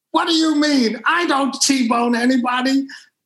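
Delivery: play-acted, high-pitched screaming. Retelling a phone call where Mario Andretti screamed at him: imitating Mario Andretti screaming. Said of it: "Mario Andretti is screaming at me".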